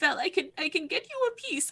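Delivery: voice welling with feeling. A character promises to bring Vel a piece, emotional. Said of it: "I'm like getting emotional as I'm saying this".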